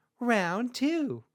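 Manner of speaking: cute kawaii uwu anime announcer, very high, very loud. Announcing the next round of a fight, kawaii anime announcer voice. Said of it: "Kawaii anime announcer, Uwu voice".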